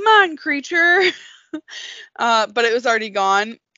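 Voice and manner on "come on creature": loud, high-pitched yelling. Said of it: "out the window yelling".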